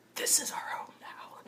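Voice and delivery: very soft, hushed, close whisper. Acting out a character walking up to Micah: whispering in his ear. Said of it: "and I whisper in his ear".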